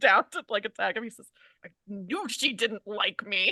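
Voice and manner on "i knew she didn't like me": slow, mumbled muttering under the breath. A character is about to be attacked and speaks: muttering to himself. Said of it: "he kind of mutters to himself".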